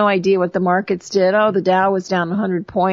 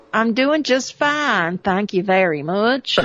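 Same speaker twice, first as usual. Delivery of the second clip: put-on, borrowed southern US accent. On a commentary show, one co-host mimics the other: imitating Butch's southern accent. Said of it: "As I imitate your southern accent".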